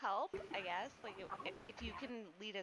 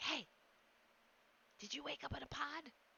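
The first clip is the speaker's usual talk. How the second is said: high-pitched yelling done in a whisper; 6 semitones higher than usual. She points at the man with the hat and addresses him: whisper-yelling. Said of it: "she's like whisper yelling at him".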